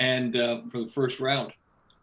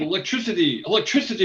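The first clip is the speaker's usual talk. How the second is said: high-pitched put-on European accent, Spanish-sounding; 6 semitones higher, 4 dB louder than usual. Retelling what he called out to everyone after a static shock, in a European accent. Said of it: "I'm trying to talk like a European".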